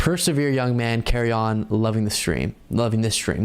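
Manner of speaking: plain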